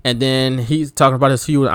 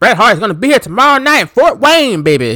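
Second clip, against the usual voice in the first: lousy put-on announcer voice, higher; 9 semitones higher, 4 dB louder than usual. Retelling a promo about Bret Hart coming tomorrow: bad Jim Ross impression. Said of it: "My Jim Ross impersonation is terrible".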